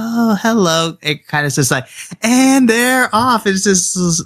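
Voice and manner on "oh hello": put-on docile, meek elven woman voice. Describing how the elven woman's voice changed, imitating her docile voice. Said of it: "It's like her more like docile".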